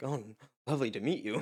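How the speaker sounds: sugary, sweet, put-on fake nice-guy voice. Recalling a show's bully meeting a boy's mother, put-on nice guy voice. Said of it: "puts on like a nice guy voice".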